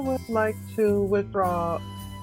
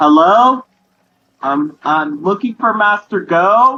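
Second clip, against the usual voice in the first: loud yelling, shouting; 13 dB louder than usual. Calling a school on the phone in character: yelling into the phone. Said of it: "could you please not yell into my ear".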